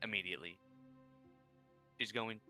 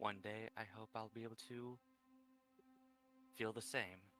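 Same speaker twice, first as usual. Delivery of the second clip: very quiet, much quieter, barely audible; 5 dB quieter than usual. Roleplaying a character following behind up the stairs: very quiet. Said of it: "In a quiet tone, very quiet".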